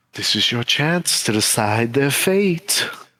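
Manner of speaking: close, soft, secretive half-whisper. A game narrator voices something that half-whispers in a player's ear: half-whispering. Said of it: "whisper in your".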